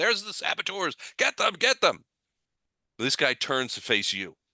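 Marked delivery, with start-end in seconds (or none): 0.0-2.0 loud yelling, pitched way up. A game narrator voices guards who have spotted the saboteurs, yelling out. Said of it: "these guys yelling out".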